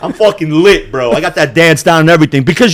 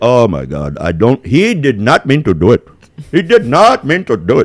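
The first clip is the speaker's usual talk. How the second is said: put-on Indian accent; 6 semitones lower than usual. Speaker acts out what the other guy says, put-on indian accent. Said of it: "I did three different fucking Indian accents".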